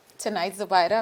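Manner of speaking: ordinary talk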